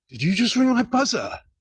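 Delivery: put-on hostile, confrontational tone. Retelling how a man confronted them at the door: imitating someone speaking aggressively. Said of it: "he did it very aggressively".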